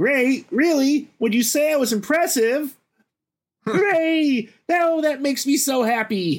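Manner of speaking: very high-pitched, slow, neurotic voice. Recounting how Rex saves the group and acting out his reply, neurotic Rex voice. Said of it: "Yep, he takes us too seriously because he's a neurotic gamer dinosaur voiced by Wallace Shawn".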